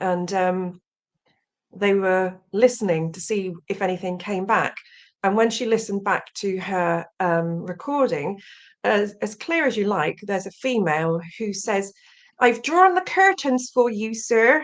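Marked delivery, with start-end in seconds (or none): 12.4-14.6 put-on English Somerset accent. Retelling a woman's voice heard on a recording, in a broad Somerset accent. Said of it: "with a broad Somerset accent".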